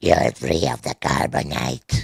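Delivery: put-on strange, odd alien voice. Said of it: "The weird voice".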